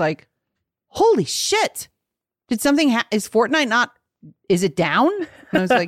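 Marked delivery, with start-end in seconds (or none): 0.9-5.1 mock stunned, stammering disbelief, tripping over words. Retelling Mary's reply to hearing of reading a book inside: imitating Mary sounding shocked. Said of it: "she was so shocked".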